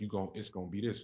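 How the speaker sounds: usual speaking voice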